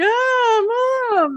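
very high, teary little crying voice. Retelling a movie scene where the boy cries to Mom: imitating someone crying. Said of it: "kind of cries a little and he's like".

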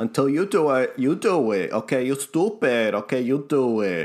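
put-on thick, heavy New York accent. Mocking how a representative talks: thick New York accent imitating AOC. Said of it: "lay on the, the, the New York accent real thick".

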